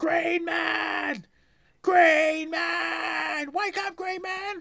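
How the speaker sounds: play-acted, very high, slow shouts, man stretched out. Retelling waiting at a crossing as a child: retelling screaming as a child.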